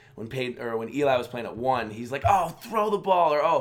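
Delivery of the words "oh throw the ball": put-on all-out scream, high and loud. Retelling how Peyton screamed in his hotel room during Eli's game, imitating Peyton Manning screaming. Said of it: "he's screaming in his hotel room".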